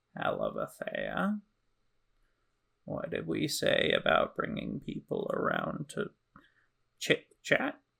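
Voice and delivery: hushed, breathy, crow-like bird-creature voice. Narrator voices a crow-like bird person opening the door to the party, crow-like bird-person voice. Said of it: "crow-like bird person".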